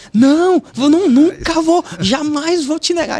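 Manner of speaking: shrill, very high, loud shout. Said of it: "Aí ele começa a gritar lá".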